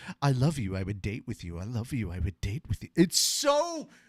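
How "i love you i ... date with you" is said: deadpan, low and dead serious. Imitating a dub voice doing really bad flirting: deadpan Wu Fei voice. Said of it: "hearing the same voice from Chang Wu Fei sit there and go".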